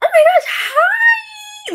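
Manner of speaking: very high, overeager, gushing voice, "hi" stretched out. Retelling running into an old classmate, imitating own high-pitched greeting. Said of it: "the way my voice goes all the way up".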